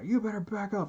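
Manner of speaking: mock very high, top-of-lungs scream. Retelling what a police officer screamed at a teenager: imitating a cop screaming. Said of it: "just screaming at the top of his fucking lungs".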